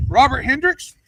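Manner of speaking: put-on drill-instructor call-out. Recounting drill instructors calling out names, retelling a drill instructor's call. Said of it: "He goes".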